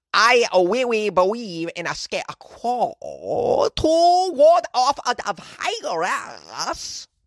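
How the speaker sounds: high, slow bad Cambodian accent. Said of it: "My bad Cambodian accent".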